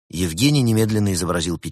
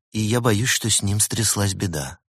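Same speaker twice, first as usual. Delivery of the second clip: ordinary delivery, nothing marked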